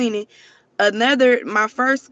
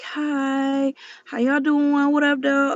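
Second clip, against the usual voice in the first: held-back, careful, slow delivery with drawn-out hi; 3 semitones higher than usual. Imitating how quietly they talked in the last video: imitating own quiet talking. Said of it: "I'm talking real quiet".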